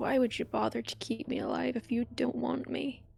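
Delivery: muttered under breath. In a role-play scene, a character mutters under her breath. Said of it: "she kind of mutters under her breath".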